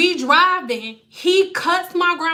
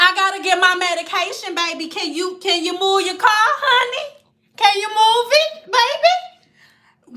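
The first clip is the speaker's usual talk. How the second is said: put-on, higher-pitched little-old-grandma voice; 5 semitones higher than usual. Quoting the speaker's grandma talking to a man who cut her off; grandma voice. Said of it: "she do have her grandma voice though".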